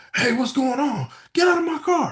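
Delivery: very high, shrill, high-pitched scream. Retelling how a car owner confronted thieves: imitating someone screaming. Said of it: "so he screams at him".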